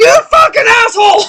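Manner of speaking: high, yelled, poor fake Australian accent. Retelling yelling in a friend's grandmother's basement, bad Australian accent. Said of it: "my Australian accent is leaves much to be desired".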